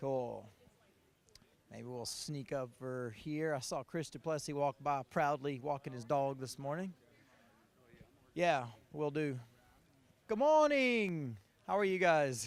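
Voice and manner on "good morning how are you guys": bad, weak, sing-song put-on Australian accent. Greeting someone good morning, in a bad australian accent attempt. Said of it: "That's my small attempt at an Australian accent".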